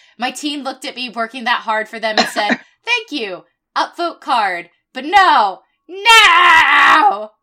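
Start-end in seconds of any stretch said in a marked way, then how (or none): 5.0-7.2 shrill, very loud, drawn-out scream on "no". Venting about nobody upvoting their card, screaming. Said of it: "I just had to scream".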